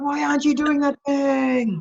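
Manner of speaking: high, loud, scolding, nagging reprimanding tone. Imitating a friend's usual question: imitating Sharon's scolding voice. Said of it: "this is the voice I get all the time".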